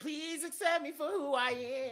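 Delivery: very high, very loud teasing parroting tone. Mimicking what the other speaker just said: mocking imitation of another speaker. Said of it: "That's what you just sound like right there".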